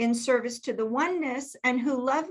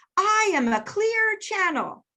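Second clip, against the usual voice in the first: firm, insistent shouting, pitched high; 9 semitones higher, 4 dB louder than usual. Retelling what a channeler said on the phone: imitating someone yelling. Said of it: "And then she started yelling".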